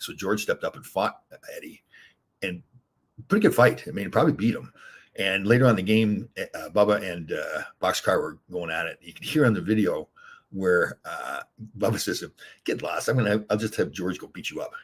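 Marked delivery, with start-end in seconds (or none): none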